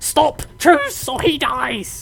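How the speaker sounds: slow, high, drawn-out speech in broken phrases. Playing a goblin holding a human hostage, speaking in broken Common. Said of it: "He speaks in broken common".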